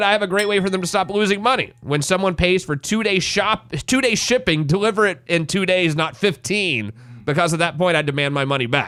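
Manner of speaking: ordinary talk, nothing marked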